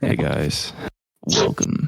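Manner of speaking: very low, deep, creaky radio-style announcer voice. Offering to do the intro as a joke: podcast host voice. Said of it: "my podcast voice and just be like".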